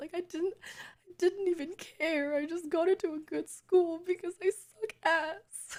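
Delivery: very high, choked-up, close to tears. Speaking to listeners, the speaker sounds choked up, choked-up voice. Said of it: "sound like I'm choking up a lot".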